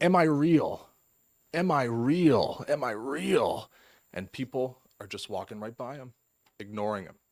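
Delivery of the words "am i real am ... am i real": put-on high, loud, very slow, stretched wailing scream. Retelling a story of a man on DuPont Circle: imitating someone screaming. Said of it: "he's screaming".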